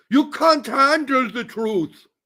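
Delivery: high, slow mock German accent.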